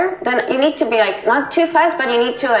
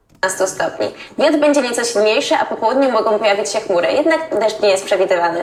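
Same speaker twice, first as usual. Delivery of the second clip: very fast, rattled-off speech, words tumbling out. Reading a weather forecast aloud in Polish: speaking very fast. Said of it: "You do speak very fast".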